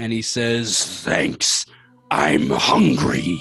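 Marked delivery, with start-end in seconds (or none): 1.0-3.4 nasty, monstrous creature voice. Voicing a rock monster that was just pulled up with the sword: monster voice. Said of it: "giant fucking nasty worm slug rock monster".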